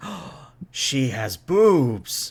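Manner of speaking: put-on very slow, awestruck, starstruck teen voice. Voicing the starstruck teenagers who stare at a crew member: starstruck teenager voice. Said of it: "starstruck, like, teenagers".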